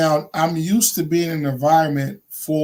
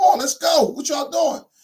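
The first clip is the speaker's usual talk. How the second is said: very high shout, urging and hurrying; 12 semitones higher than usual. Retelling urging workers who found it yelling: imitating yelling at workers. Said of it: "why is he yelling?".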